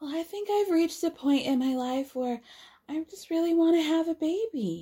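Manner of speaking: put-on baby voice. Acting out Shara answering Noble, who asked who is having a baby, in a put-on baby voice. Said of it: "Shara gets into this baby voice".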